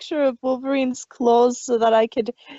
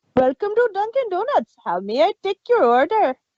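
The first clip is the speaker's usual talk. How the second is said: convincing, fully settled put-on Indian accent, pitched up; 8 semitones higher than usual. Speaker retells answering a drive-through while stuck in a learned accent: imitated Indian accent. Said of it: "I got stuck in it".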